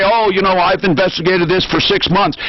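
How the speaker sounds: ordinary talk, nothing marked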